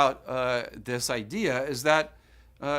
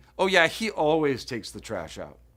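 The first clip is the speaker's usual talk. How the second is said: heavy sarcastic tone, meaning the very opposite. Explaining sarcasm with a messy roommate example, sarcastic. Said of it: "So I say sarcastically".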